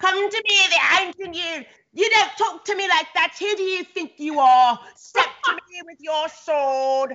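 put-on British accent, high. Recalling childhood cardboard-sword games with a friend, in a fake British accent. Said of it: "we had like the fake British accents".

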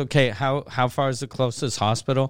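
usual speaking voice

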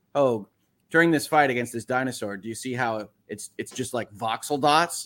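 plain

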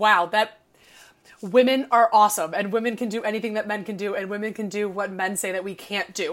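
ordinary talk

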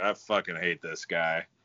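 put-on under-breath mutter. Sitting at the game beside his wife, he is retelling a mutter under breath. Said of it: "under my breath".

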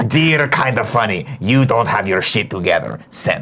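cartoon internet-commenter voice. Podcaster voices an imagined internet commenter writing to the show: Strong Bad voice. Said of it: "the internet commenter voice comes in".

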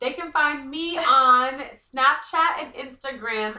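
booming, very loud, full-volume yell. Answering the host's question about where to find them, yelling. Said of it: "are you yelling?".

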